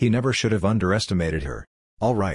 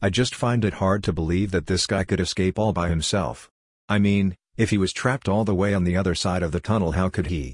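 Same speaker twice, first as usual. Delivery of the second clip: ordinary delivery, nothing marked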